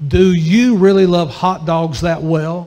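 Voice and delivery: booming, very stern, loud put-on voice. Recounting what the Lord suddenly said to him, retelling a very stern voice. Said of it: "with a very stern voice".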